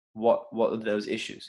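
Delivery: ordinary talk, nothing marked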